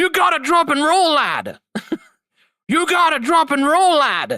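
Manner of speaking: put-on Irish accent, game voice-acting. Quoting a game character's line about its voice acting, in an Irish accent. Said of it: "that Irish accent".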